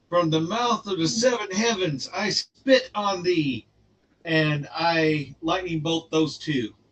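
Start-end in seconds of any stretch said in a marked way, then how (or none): 0.1-3.6 dramatic, in-character, declaimed war cry. Voicing the character Strangler casting a spell: screaming in character. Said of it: "Strangler screams".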